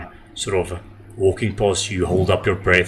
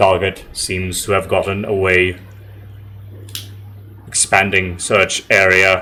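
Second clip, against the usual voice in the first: mechanical, robotic, machine-like voice. Game narrator voicing a pursuer searching for the players: robotic voice. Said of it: "say in almost like a robotic voice".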